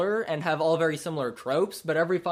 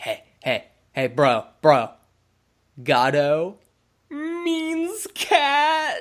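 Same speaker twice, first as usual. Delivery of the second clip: mock loud, very slow stoned drawl, "cat" stretched; 3 semitones higher, 5 dB louder than usual. Retelling how mom's pothead boyfriend Michael Gatto would talk: imitating Michael Gatto, stoned. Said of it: "the biggest pothead ever".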